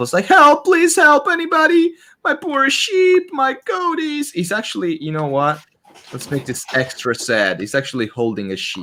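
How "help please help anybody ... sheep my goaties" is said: frantic, very high-pitched, desperate screaming. A game narrator voices a sheep herder running down a hill, screaming for help. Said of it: "he's like screaming for help".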